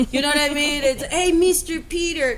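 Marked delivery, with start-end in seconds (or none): 1.0-2.4 put-on Mexican accent, pitched up. Retelling an audition for a maid role: put-on Mexican accent. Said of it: "for the maid role, I had to do an accent".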